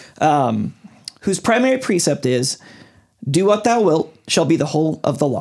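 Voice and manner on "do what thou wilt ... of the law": ordinary talk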